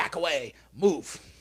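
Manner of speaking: put-on demanding, childish tantrum voice. The speaker acts out what Cyber says, imitating Cyber. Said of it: "She just goes".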